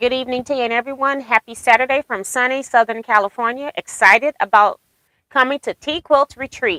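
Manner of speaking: ordinary delivery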